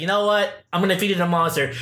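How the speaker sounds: normal talking voice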